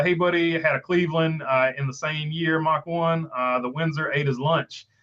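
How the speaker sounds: normal talking voice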